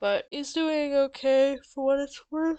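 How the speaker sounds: loud, high words pushed out mid-yawn. A speaker commenting on another player early in the morning, yawning while talking. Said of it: "Sorry. I'm yawning".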